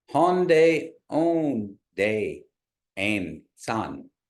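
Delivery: very slow, deliberate, word-by-word delivery. Saying the phrase once more to let it soak in, really slowly. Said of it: "I'll say it really slowly".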